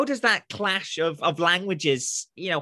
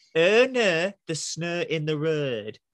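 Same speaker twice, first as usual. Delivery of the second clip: accent from Hull. Teaching how to do the whole accent with one phrase, in a Hull accent.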